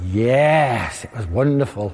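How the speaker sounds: put-on low, slow Welsh accent, drawn-out yes. Recalling people back from a Wales-England match, quoting their reply in a Welsh accent. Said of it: "in their Welsh accents".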